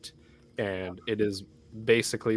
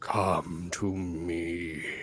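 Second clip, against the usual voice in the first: resonant, beckoning voice with drawn-out me; 3 semitones lower than usual. Voicing a presence as a player runs: booming voice. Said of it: "the booming voice just says".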